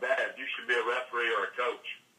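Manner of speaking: wry, dry, lightly sarcastic mock compliment. Retelling a daughter's remark while watching a game: imitating daughter's sarcastic tone. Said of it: "kinda sarcastic, she's like".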